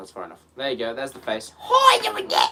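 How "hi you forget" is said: very high, loud, squeaky character voice. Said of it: "He does talk like that".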